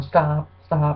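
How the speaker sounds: ordinary delivery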